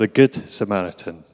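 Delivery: low-pitched Glaswegian accent. Telling a comic Bible story, repeating its title as said in Glasgow: Glasgow accent. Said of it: "as we'd say in Glasgow".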